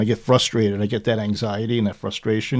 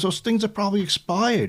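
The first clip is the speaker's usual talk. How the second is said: put-on yell, higher; 11 semitones higher than usual. Retelling what the son said after taking expired pills: imitating son yelling. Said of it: "basically yelled at me".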